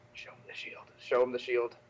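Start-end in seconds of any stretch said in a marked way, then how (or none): 0.1-0.8 hushed aside mutter, under the breath. Player narrating their character motioning to Jax with a flourish, speaking under the breath. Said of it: "sort of under my breath".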